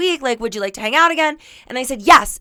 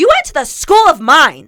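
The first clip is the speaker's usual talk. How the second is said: mock yelling, loud, with swooping pitch; 3 semitones higher, 6 dB louder than usual. Retelling how she yelled at her date about the broken hot tub: retelling her own yell. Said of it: "now I'm, like, yelling at him".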